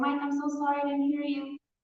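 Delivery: high, frantic, pleading, begging voice. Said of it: "trying to apologize".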